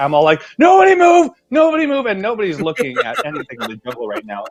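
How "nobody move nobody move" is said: very high, loud, terrified, panicked yell. Retelling swatting a spider into the boat: retelling own panicked shout. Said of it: "I'm just full throttling it".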